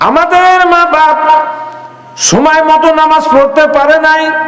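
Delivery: impassioned preaching cry.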